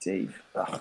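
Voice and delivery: under one's breath. Acting out a scene, repeating a new acquaintance's name: said under one's breath.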